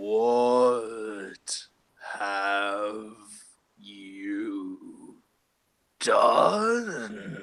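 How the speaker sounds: baffled, bewildered, very slow and drawn-out. A player looks down at the turtle and speaks in a bewildered voice. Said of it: "just in like a bewildered voice".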